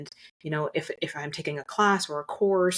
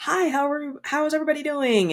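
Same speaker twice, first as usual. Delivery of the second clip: very high, big-energy stage voice; 10 semitones higher than usual. Showing how they greet a big crowd on stage, big energetic stage voice. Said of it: "that bigger energy".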